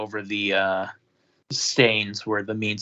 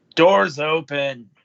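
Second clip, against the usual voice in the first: gruff, loud man's voice; 5 semitones higher, 5 dB louder than usual. Game master voicing a man on the other side, gruff man's voice. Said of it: "You hear a gruff man's voice on the other side go".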